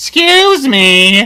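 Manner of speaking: piercing squeak, very high and very loud. Retelling what a guy with a pallet of ice said: imitating a high-pitched voice.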